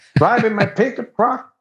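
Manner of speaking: put-on high-pitched voice with Texas accent. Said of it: "do your Texas accent one more time".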